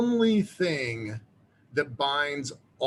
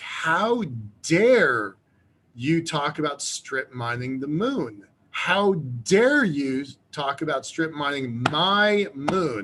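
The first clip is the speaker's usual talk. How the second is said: put-on, slow, very emotional accusing outburst. Retelling a lecture audience member pointing and accusing: imitating an emotional outburst. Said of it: "she was very emotional about it".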